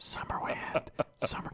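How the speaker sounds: quiet whispering. Retelling prompting someone from behind at a panel, whispering. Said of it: "and I'm whispering".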